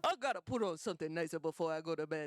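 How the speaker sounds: low, put-on Italian grandmother accent. Repeating what the speaker's grandmother said about bedtime, imitating her Italian accent. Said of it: "That's what she sounds like".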